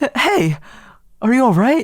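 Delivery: voice cracking very high partway through. Playing a game, calling out to a character in trouble, voice cracking. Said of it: "that was a nasty voice crack".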